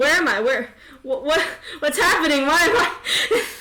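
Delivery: high, loud, frantic and confused panic. A player voices a confused character looking around, not knowing where he is, panicking. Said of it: "this guy's panicking".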